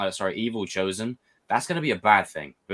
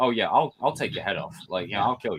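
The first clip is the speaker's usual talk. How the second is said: usual speaking voice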